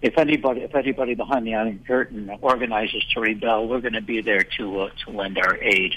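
ordinary talk, nothing marked

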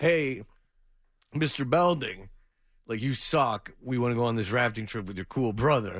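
normal talking voice

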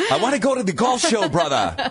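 amateur put-on Scottish accent. Speaking on the morning show, trying out a put-on Scottish accent. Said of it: "Is that your Scottish accent?".

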